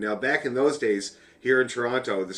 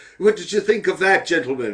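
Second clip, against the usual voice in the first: put-on loud Glaswegian accent, pitched up; 6 semitones higher, 7 dB louder than usual. Retelling the question to nervous players after they finish a reel, in Bobby Brown's Glaswegian accent. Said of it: "says in his Glaswegian ask, uh, accent".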